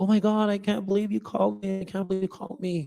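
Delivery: high, weepy, tearful voice crying through words. Retelling a phone call from a caller who was crying: imitating someone crying. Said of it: "she was crying on the phone".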